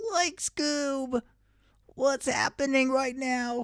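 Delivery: very high, goofy cartoon voice. Told to go for it, doing a Shaggy impression. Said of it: "I think I can do a good Shaggy impression".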